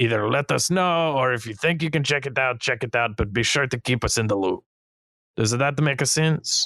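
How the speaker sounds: bad fake French accent. Voicing a character telling adventuring parties to watch for evil: terrible stereotypical french accent. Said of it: "terrible, very stereotypical accent".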